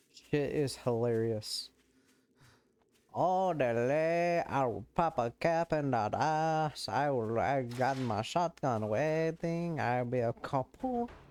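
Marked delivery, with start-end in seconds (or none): 3.1-11.0 put-on slow Mexican accent with rural drawl. Talking with another person about accents, doing a mexican redneck accent.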